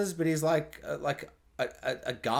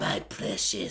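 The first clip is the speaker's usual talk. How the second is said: poorly done put-on creature voice; 9 semitones lower, 3 dB quieter than usual. While talking about an episode, the speaker tries a bad Gollum impression. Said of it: "That's a bad Gollum".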